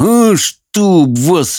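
through clenched teeth. Narrator reads Howl's retort to Sophie, through gritted teeth. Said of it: "процедил Хоул сквозь зубы".

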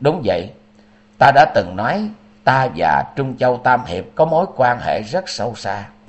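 usual speaking voice

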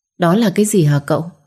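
plain reading voice

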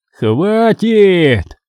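short cry. Mitrofanov, amid the shooting at the monster, shouted. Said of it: "прокричал Митрофанов".

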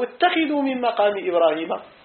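ordinary talk

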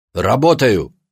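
sharp, short, curt snapping tone. Asked by a visiting woman whether he is having fun, a man answers, snapping. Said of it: "огрызнулся он".

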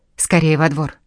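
ordinary delivery, nothing marked

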